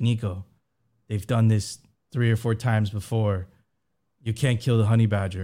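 put-on very thick, heavily laid-on Chinese accent. Quoting what a man living in China told him, in a thick Chinese accent. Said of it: "like in his like very thick Chinese accent".

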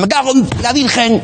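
put-on high, angry yelling voice. Deciding what kind of director to play, the speaker imitates one who shouts. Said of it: "De los que dan voces que dicen".

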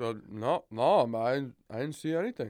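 put-on slow slurred speech. Retelling a man's answer to their question, imitating slow slurred speech. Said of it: "His response was slow and slurred".

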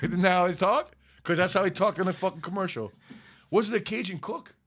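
ordinary delivery

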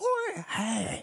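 pushed way up, squeaky high voice. Imitating the comedian mixing his two voices: Adam Sandler voice. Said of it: "That's spot on".

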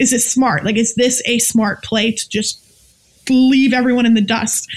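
ordinary talk

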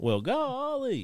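very high, jokey, pitch way up. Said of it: "Gomer Pyle".

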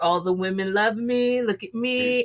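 put-on slow, cocky, full-of-himself frat-boy voice. Describing frat boys from 1980s TV shows and movies, imitating a cocky frat boy. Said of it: "when I think frat boy".

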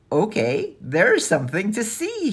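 calling out, high and rising. Narrator reads a girl calling to the others as she starts up the stairs, calling out. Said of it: "she called as she started up the stairs".

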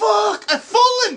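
shrill, very high, very loud screaming panic. Acting out a fallen man screaming for help; acting out a trapped man screaming. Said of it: "acting out trapped man screaming".

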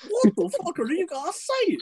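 silly cartoon dog voice, swooping up high. Someone calling for a perfect copy of Goofy's voice, then doing a Goofy voice. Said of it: "pitch perfect copy of Goofy's voice saying".

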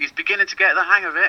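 acted-out shrill shout at a very high pitch. Retelling what a parent shouted after a move to midfield: imitating a parent shouting. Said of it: "shouting again".

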